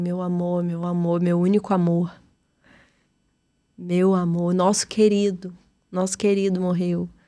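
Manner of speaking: inconsolable sobbing, weeping through every word. Retelling a mother's words after a death, imitating someone crying inconsolably. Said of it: "minha mãe, assim, chorando muito, muito inconsolável".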